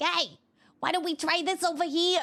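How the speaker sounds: rough, raspy, gravelly little cartoon canary voice. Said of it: "She's got kind of this gravelly voice and she'll be like".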